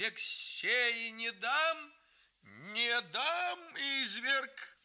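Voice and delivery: very high, slow, drawn-out shouting. A grandmother seizes the narrator in her arms and shouts: shouting. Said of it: "закричала".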